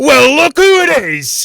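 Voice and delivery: extremely loud, shrill, high-pitched dwarf shout. Voicing a dwarf who marches up and slams the table: extremely loud dwarf voice. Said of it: "you know he's extremely loud".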